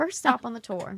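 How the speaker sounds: fake American South accent. Joking about the first stop on the tour: put-on southern accent. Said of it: "Your Southern accent's pretty good".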